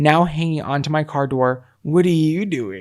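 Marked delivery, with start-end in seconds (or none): 1.8-2.8 put-on drunken, slurred speech. Retelling a drunk partner stumbling toward the car: imitating drunk slurring. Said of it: "he just slurred again".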